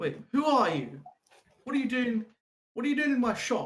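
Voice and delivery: very high, loud, yelled shout. Narrating a scene, the speaker voices a man who turns and shouts: shouting. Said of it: "he shouts".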